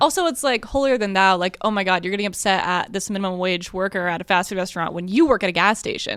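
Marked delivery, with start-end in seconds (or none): none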